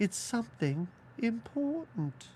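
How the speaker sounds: sudden, abrupt put-on British accent. Retelling how the dead daughter in the movie talks: imitating a british accent. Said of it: "the dead daughter somehow turns British".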